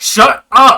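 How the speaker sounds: shrill, very high-pitched, very loud scream. Narrating a scene where Kalik is dragged along and stops, Kalik screaming. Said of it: "he stops in his tracks and he screams".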